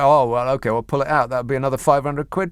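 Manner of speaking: ordinary delivery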